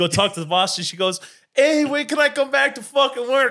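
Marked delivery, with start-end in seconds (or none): 1.5-3.5 put-on Brooklyn accent, very high pitch. Retelling what a woman asked the boss, in a Brooklyn accent. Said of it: "are you doing a Brooklyn accent from a Russian girl?".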